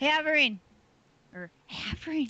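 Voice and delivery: hushed whisper. Going to check whether Avery has the book, calling to her, whispering. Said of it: "Why are we whispering?".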